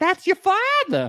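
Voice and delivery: very high, put-on Boston accent, exclaimed. Retelling friends' reaction on a show: imitating a Boston accent. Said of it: "they break into Boston accents".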